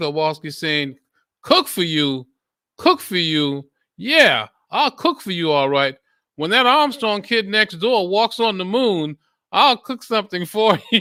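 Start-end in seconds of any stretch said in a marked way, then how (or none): 1.4-11.0 shrill, raised yelling. In a joke, a boy overhears a wife yelling at her husband; Mrs. Kowalski yelling. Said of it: "Kowalski yelling at Mr".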